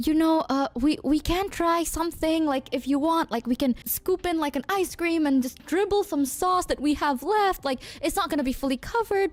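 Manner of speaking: plain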